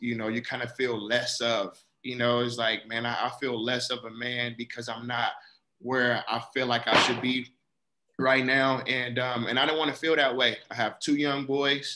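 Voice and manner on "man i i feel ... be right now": ordinary delivery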